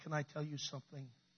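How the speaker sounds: put-on breaking voice. Speaker retelling what a woman on stage said, imitating a broken voice. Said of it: "In a very broken voice".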